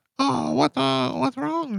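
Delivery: very high, creaky, swooping comic character voice. Retelling a comedy bit, imitating Manson's crime-fighter voice. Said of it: "Manson used to do this great voice".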